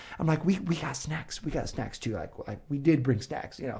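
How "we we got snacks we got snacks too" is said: mock flustered, breathy, embarrassed near-whisper, tripping over words. Retelling apologizing to a mom who shared food: retelling own embarrassed reply. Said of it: "embarrassed that she thinks we're a bad parent".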